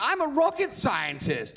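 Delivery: deliberate, drawn-out, high, sing-song put-on English accent. Speaker contrasting a hillbilly lilt with how a rocket scientist should sound, English accent. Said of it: "you'll believe somebody with an English accent".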